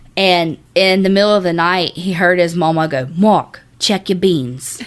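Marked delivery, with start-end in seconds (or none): 3.0-4.8 put-on heavy, thick New Orleans accent, calling out. Act out Mark's mama calling to him in the middle of the night, imitating a thick New Orleans accent. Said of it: "she has like a thick New Orleans accent".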